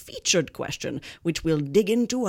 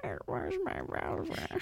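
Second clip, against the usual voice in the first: put-on creaky, elderly voice of an 80-year-old; 7 semitones lower, 11 dB quieter than usual. Repeating a joke punchline as if 80 years old: creaky, elderly-sounding voice. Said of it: "Again, sounding 80".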